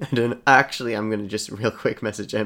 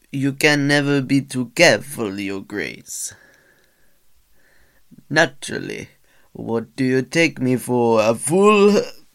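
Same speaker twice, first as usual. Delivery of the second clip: unconvincing put-on French accent, raised pitch; 3 semitones higher, 5 dB louder than usual. Showing off accents he admits he can't do, attempting a French accent. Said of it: "That did not sound French".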